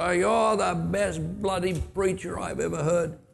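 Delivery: mock sloppy drunken slurring. Retelling a drunk man interrupting a sermon from the back row, imitating drunken slurring. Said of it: "with slurring all the while".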